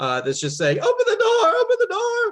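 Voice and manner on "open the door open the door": frightened woman's voice, very high, terrified cry. Game master voices someone heard behind a door to the players; terrified female voice. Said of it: "a female voice um, that seems uh, kind of terrified".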